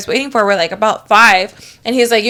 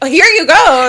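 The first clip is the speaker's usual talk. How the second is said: thrilled, high, bursting with eager excitement; 6 semitones higher, 4 dB louder than usual. Retelling how a guy handed over a fish bowl: imitating an excited guy. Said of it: "so excited".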